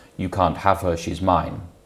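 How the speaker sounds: normal talking voice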